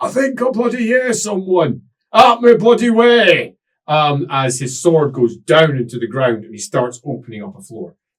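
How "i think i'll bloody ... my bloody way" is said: very high, roaring, bellowing shout. The narrator voices Boris Tallbringer as the players walk toward him, bellowing. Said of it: "You hear him bellowing".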